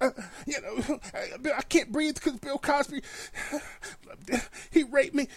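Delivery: put-on breathlessness. Mocking a woman on national tv, imitating her acting like she can't breathe. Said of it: "acting like she can't breathe".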